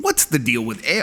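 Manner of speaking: comic delivery broken off midword, then stalling. Reading a viewer question, trying a Jerry Seinfeld impression. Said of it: "I'm trying to do my Jerry Seinfeld".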